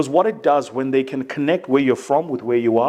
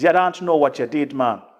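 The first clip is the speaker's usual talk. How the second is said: put-on thick, laid-on, heavy Caribbean accent. Quoting what Michael Seeley, who put the Trinidad event together, told you, in his heavy Caribbean accent. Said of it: "he said in like this heavy, like Caribbean accent".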